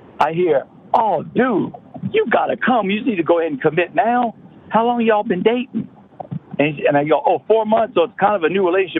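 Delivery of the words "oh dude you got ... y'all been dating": eager, pushy, pitched-up car-salesman hard sell. Retelling what the coaching staff said as he got off the elevator, car salesman voice. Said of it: "it sounded like a car salesman".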